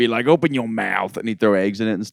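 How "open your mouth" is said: put-on thick Southern accent. Imitating the big guy who ran it: thick southern accent. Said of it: "he talked like this. He had a thick Southern accent".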